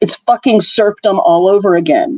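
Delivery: ordinary delivery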